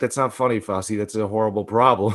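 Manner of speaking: normal talking voice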